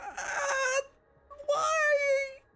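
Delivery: very high-pitched pained yelp. Voicing a captured character whose dislocated shoulder is grabbed: NPC crying out in pain. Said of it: "you hear him go".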